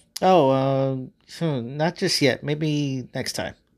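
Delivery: distant, distracted, absent-minded, far away. Narrating a reply to Adam's question, distant and distracted. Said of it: "sounding rather distant and distracted".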